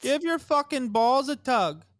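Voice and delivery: very high-pitched attempted Canadian accent. Asked to do a canadian accent, speaker tries one: attempted canadian accent. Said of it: "Can you can you do a Canadian accent?".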